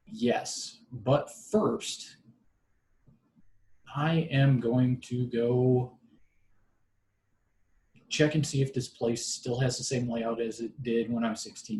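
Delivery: ordinary delivery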